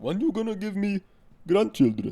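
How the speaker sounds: put-on very high, loud Indian or Pakistani accent. Retrying mom asking for grandchildren: imitating mom in Indian-sounding accent. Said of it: "That sounds fucking Indian or Pakistani".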